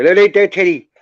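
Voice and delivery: put-on Scottish-accented voice. Imitating a friend who rang yesterday, Scott's Scottish accent. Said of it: "his Scottish accent".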